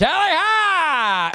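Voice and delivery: shrill, very high-pitched, stretched-out yell. Announcing a prediction after promising to shout it: shouted loudly. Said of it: "I'll I'll shout it".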